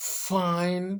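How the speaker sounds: first syllable fin of findings stressed hard, breathy. Teaching french speakers to pronounce findings: strong stress on 'fin' in findings. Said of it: "J'accentue bien la première syllabe, je vais un peu comme souffler".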